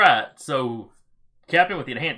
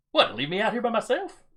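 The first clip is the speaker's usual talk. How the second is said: pitched-up, bickering, arguing soldier voice; 9 semitones higher than usual. Voicing a trooper arguing over who stays on watch: arguing trooper. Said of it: "while they're arguing about who's gonna go back".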